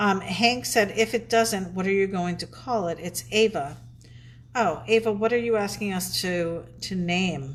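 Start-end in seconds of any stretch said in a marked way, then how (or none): none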